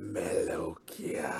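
rasping, hushed, grating crying wail. Narrating a scene to listeners walking to a terminal, an unseen figure calls out in a grating, raspy, wailing voice. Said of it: "grating, raspy, wailing voice go".

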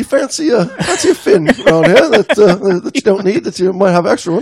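high, laughing mock British accent. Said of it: "Stop with that accent".

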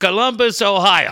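thickest put-on, very strong Puerto Rican accent. Retelling how a guy answered where he is from, in a very strong put-on Puerto Rican accent. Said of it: "in the strongest Puerto Rican accent I've ever heard".

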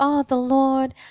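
high, slow, drawn-out whingeing tone. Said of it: "whinge and say".

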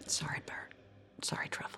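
hushed, very soft whisper, barely voiced. Playing a character who turns around while leaving, whispering. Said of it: "she just kind of turns around and whispers".

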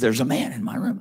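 whispered voice. Retelling a late-night video call from a friend, imitating someone whispering. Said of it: "he's whispering".

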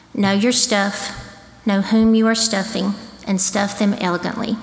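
plain

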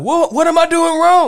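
yelling out. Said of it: "He kept yelling out".

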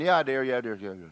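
acted tuned-out, distracted, half-listening delivery. Retelling how Lisa answers on the phone while not listening: imitating Lisa not listening. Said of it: "she's on the phone going".

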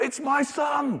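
very high overjoyed cry, bursting with joy. Acting out the father running down the path: acting out an excited father. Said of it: "the father is so excited".

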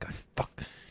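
muttered, whispered under the breath. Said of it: "It's like".

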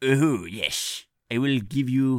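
terrible fake French accent. Voicing the mayor after being told to make him French, in a bad French accent. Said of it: "That's awful. Keep doing it".

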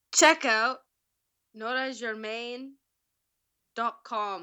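put-on accent that comes out Pakistani-sounding. Coached to repeat a line piece by piece; accent attempt sounding Pakistani. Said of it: "You sound Pakistan".

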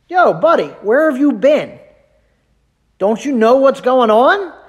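high, mocking, sarcastic teasing tone. Paraphrasing the disciples talking to Jesus unaware: imitating sarcastic disciples. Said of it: "I love the sarcasm".

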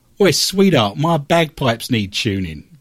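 Cockney-style East London accent. Show host turns a guest's question into a pickup line, in an east london accent. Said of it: "I went into an East London accent then".

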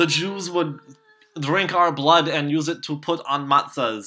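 lousy, shaky, badly put-on Polish accent. Discussing vampire lore, quoting what people would say, shitty Polish accent. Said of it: "I don't know why I'm going for, like, a Polish accent".

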